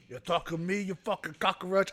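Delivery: attempted tough guy voice that misses. Opening a movie talk, trying a Tony Montana impression. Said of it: "I can't do a good Tony Montana".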